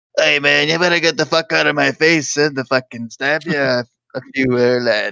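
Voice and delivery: rough, gritty, evil-sounding villain voice. Imagining how the coronavirus would talk, in a gritty evil voice. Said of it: "really gritty sounded, like, uh, evil voice person".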